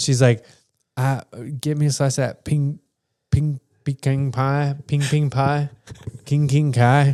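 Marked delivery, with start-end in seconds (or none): 1.0-7.1 put-on high, slow older lady voice, stumbling over "pecan pie". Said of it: "She's, like, going off it".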